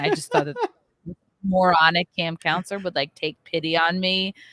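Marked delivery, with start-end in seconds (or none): none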